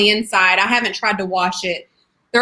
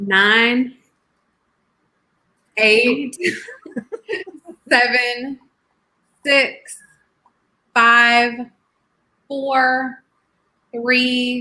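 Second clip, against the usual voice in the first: slow, unhurried counting with drawn-out nine. Counting down from twelve after being asked to go slower, slow counting.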